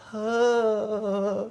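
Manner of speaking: flat, unimpressed, drawn-out deadpan huh. Retelling how people react when they clear: imitating a flat unimpressed reaction. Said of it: "they go".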